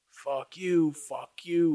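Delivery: high-pitched, drawn-out, mock screamed curse. Retelling how a driver passing in traffic screamed: imitating someone screaming. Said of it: "screaming and yelling and going to town on me".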